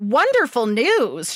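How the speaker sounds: stunned, dumbfounded, disbelieving. She echoes Sam's reply to her news, dumbfounded.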